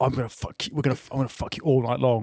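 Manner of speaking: swaggering, cocky, bragging, boastful tone. Explaining a joke term, imitating men who brag before sex: imitating a boastful man. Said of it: "men are like".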